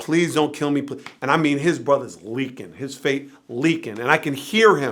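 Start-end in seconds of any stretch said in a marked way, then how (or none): 0.0-0.9 put-on desperate pleading tone. Recounting a man begging his threatening brother, retelling desperate pleading. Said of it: "pleading with him".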